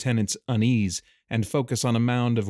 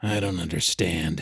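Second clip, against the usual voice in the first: grumbling, disgruntled tone; 5 semitones lower than usual. Callum answers Micah's explanation to the captain, grumbled. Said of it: "grumbled Callum".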